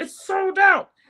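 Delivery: very high, loud, squeezed-up puppet voice. Retelling Stephanie's reply to Anastasia's offer of makeup, in a Grover voice. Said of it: "why do I have a Grover voice?".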